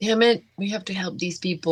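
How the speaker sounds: frustrated, muttered under the breath. Speaking in character to another character: muttered under breath. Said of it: "I say under my breath to Lucy".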